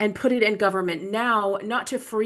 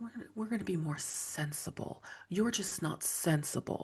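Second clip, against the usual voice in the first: mock breathy whisper, hushed, dripping disdainful condescension; 2 semitones lower, 13 dB quieter than usual. Imitating political figures talking about going back to sensible times: imitating disdainful condescension. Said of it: "they say it with such disdain and such condescension".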